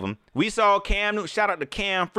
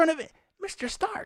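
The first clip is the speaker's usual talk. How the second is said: put-on breathy, eager young hero voice; 11 semitones higher, 6 dB quieter than usual. Keep showing how he sounds, addressing Mister Stark, in a Spider-Man voice. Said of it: "He sound like Spider Man".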